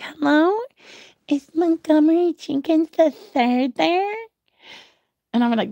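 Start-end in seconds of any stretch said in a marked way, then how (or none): 0.0-4.1 put-on high voice sounding like a small child. The speaker retells a phone recording asking for someone, in a little kid voice. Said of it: "I sounded like a little kid".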